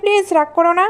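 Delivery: ordinary delivery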